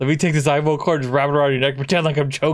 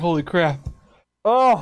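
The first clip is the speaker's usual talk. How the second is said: laughing so hard it brings tears; 3 semitones higher than usual. Host wrapping up an episode after a joke ad, laughing to tears. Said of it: "I need to stop crying".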